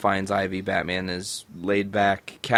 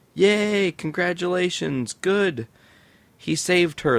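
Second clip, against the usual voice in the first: very high, fake-thrilled, sarcastic fake cheering; 10 semitones higher than usual. Recapping a comic scene where Batman saves Catwoman again: sarcastic fake cheering. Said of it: "I'm being sarcastic".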